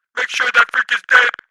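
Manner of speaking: very high, very loud robotic machine-voice yell. Reading a fight scene aloud, voicing an unseen figure: robotic shouting voice. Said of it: "Shouted a robotic voice".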